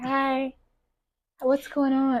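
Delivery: soft, cute little voice. Recounting how she walked around talking in a new voice; imitating a cute voice. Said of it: "I thought it was so cute".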